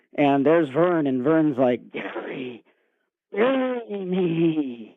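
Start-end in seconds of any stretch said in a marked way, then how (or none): 2.0-4.8 eerie, frightening, spooky high voice, me drawn out. Storyteller voicing a figure in a character's dream, really scary voice. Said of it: "In a really scary voice".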